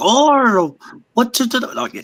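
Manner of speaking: put-on British accent. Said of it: "a British accent or, like, like".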